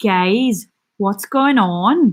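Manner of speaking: put-on slow, casual Northern Irish accent. Asked for an Irish accent, the speaker imitates a woman from their management's office, Northern Irish accent. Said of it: "but that's Northern Irish".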